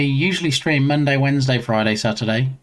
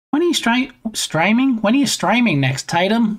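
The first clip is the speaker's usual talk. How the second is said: Australian accent creeping in, pitched up; 9 semitones higher than usual. Asking a streamer when they stream next, slipping into Australian accent. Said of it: "I went all Australian for some reason".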